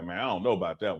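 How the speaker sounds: muttering under breath. Showing how a batter mutters at the pitcher: muttering under breath. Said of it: "quasi under your breath".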